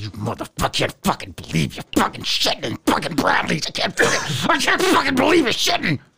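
through clenched teeth. Retelling how the mother cursed while cleaning up: imitating swearing through gritted teeth. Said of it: "she grit through it".

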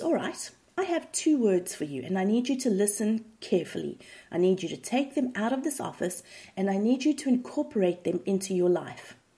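plain

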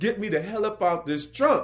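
put-on freaked-out, panicky, high voice. Retelling being stuck in a car trunk, calling to the crew: retelling own panicked shout. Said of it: "I'm freaking out".

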